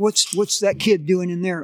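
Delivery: ordinary talk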